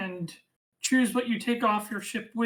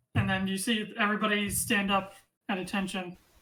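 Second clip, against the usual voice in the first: usual speaking voice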